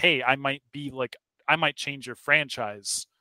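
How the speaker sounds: ordinary talk, nothing marked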